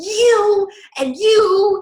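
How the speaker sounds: put-on crying yell. Retelling a scene where Marissa yells at two people: imitating Marissa crying and yelling. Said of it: "and she's crying".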